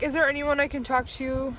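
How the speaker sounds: ordinary talk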